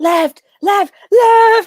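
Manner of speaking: high, loud shouted calls.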